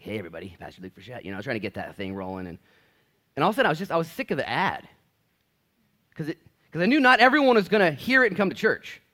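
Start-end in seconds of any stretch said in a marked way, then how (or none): 0.0-1.2 smooth, creamy radio-announcer voice, lower and quieter. A pastor recalls recording his Easter church ad: smooth, creamy radio voice. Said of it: "that perfect, you know, radio, creamy, smooth voice".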